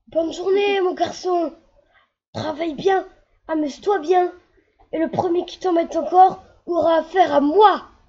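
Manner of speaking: booming big yell. Narrator reads a character calling out on the school path: big voice, yelling full force. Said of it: "Fanfan prend une grosse voix et hurle de toutes ses forces".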